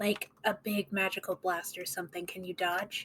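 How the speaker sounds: hushed whispering. In a tabletop game, a player speaks privately to Lucius, whispering. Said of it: "whisper to Lucius".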